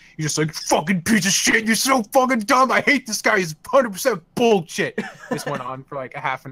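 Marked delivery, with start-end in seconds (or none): 0.6-5.0 high, loud, furious, livid, pissed-off rant. Retelling a paleontologist ripping apart a dinosaur denier: imitating someone furiously angry. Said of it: "He just got super fucking pissed".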